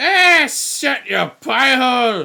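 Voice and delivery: shrill, very loud, high-pitched dwarf voice yell. A game master voices a character interrupting a player's character, in a dwarvish voice. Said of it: "you hear a dwarvish voice go".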